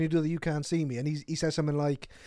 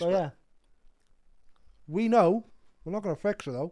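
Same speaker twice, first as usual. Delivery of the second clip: speech muffled by chewing, mouth full; 3 semitones higher than usual. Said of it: "I put a chocolate finger in my mouth".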